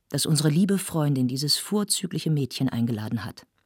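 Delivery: ordinary delivery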